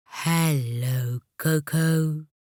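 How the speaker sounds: deep, kindly witch voice, drawn out. Narrator reading a toy witch greeting Coco, in a deep and kind voice. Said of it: "said the witch in a deep and kind voice".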